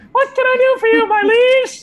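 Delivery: tiny, very high, loud piping voice. A miniature warrior woman comes alive in the player's palm and speaks: tiny Bulgogi voice. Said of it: "You hear this tiny voice".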